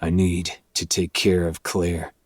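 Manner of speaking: ordinary talk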